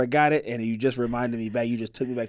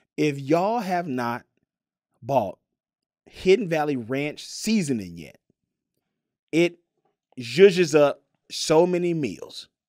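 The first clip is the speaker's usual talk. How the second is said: serious, slow, emphatic, earnest delivery. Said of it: "I'm being serious about this".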